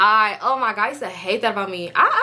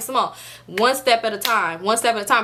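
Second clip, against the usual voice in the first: normal talking voice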